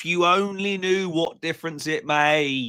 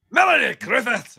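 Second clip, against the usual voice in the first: put-on angry Scottish accent, much higher and louder; 7 semitones higher, 5 dB louder than usual. Told to say the name in a particular accent, the speaker tries: Steve Cassidy accent. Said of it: "say it in a Steve Cassidy accent... sound really angry and you've got Scottish sound".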